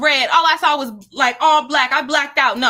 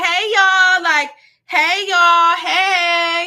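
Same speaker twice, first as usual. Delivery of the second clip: put-on, very slow, stretched-out hollered "hey"; 4 semitones higher than usual. Telling listeners about walking in to hang out, retelling their own screamed greeting. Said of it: "I don't ever walk in screaming like that".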